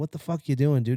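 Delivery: ordinary delivery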